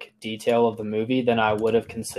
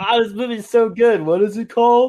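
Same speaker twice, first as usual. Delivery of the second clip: very high, shrill, loud, teasing mocking voice; 12 semitones higher, 6 dB louder than usual. Teasing the other speaker by acting out their words: mocking imitation of the other speaker. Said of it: "You're like".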